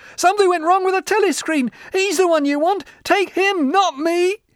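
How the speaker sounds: very high, loud, shrill screech. A man accuses another prisoner as the guards step forward, shrieking. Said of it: "The man's voice rose to a shriek".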